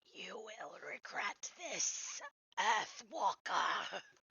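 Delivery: slow, hissing creature voice. A game master voices the badly hurt Sahagin threatening the player: hissing Sahagin voice. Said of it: "it just hisses at you".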